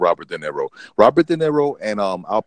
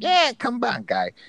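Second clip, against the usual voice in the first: signature voice pushed very high in pitch; 3 dB quieter than usual. Describing a movie trailer's opening after a phone rings: Joe Pesci voice. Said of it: "that Joe Pesci signature voice".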